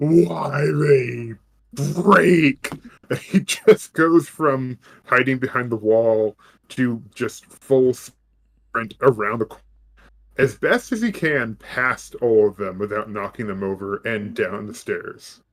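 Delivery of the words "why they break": mock, loud, booming, roaring yell in different voice. Voicing a character who finds the janitor dead: much louder, deeper yelling voice. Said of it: "yelling, but you hear it not in his voice. It's a completely different, much louder, deeper voice".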